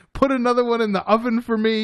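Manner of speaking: contented talk while chewing. Retelling how a customer asked for more food, imitating a happy man chewing. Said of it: "smiling and chewing and being like".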